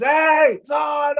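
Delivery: high, loud, excited screaming.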